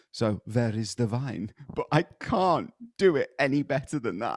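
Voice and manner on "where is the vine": put-on German accent, w said as v. Showing how the letters would sound said in German, in a fake German accent. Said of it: "anything with a W is a V".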